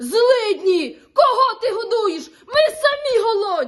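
very loud, furious, drawn-out bellow. The grandfather, angry at the grandmother's giving to others; angry shouting. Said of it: "Дід сердився, кричав".

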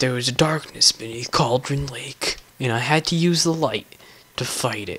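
soft, almost hushed narrating voice. While playing a game where the lights will go out, do an Alan Wake impression. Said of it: "That's my Alan Wake impression of the voice actor".

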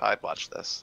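ordinary talk

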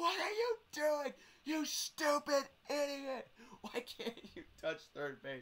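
very shrill, high, loud screaming. Retelling the dugout's reaction to a missed third base: imitating teammates screaming. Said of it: "everyone in our dugout was screaming at them".

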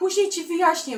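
high, loud yelling. A character answers a puzzled dragon while running past; yelling while running. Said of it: "wrzasnął Gniewko w biegu".

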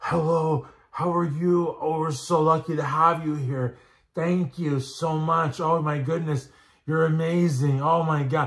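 ecstatic, gushing, overjoyed delivery. Retelling a viral Instagram reel of a warm greeting: imitating Steve Weinberger. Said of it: "you saw how Steve Weinberger was, that Instagram reel".

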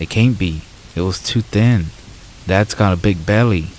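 plain

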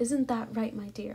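plain

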